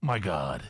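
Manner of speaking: very low, deep, dropped voice. Retelling what an ex-wife said after a surprise: imitating ex-wife's deep voice. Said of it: "Did her voice get deep like that".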